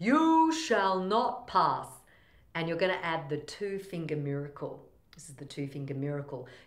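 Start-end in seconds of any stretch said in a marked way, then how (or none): 0.0-1.9 loud, slow, drawn-out, swooping delivery. Showing a voice exercise with a wizard line: Gandalf line. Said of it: "Let's add Gandalf".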